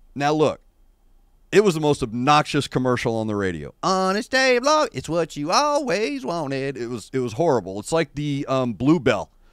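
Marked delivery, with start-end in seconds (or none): 3.8-6.8 sweet, syrupy Southern drawl, pitched up. Imitating an obnoxious radio commercial: imitating sweet Southern drawl. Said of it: "that sweet Southern drawl".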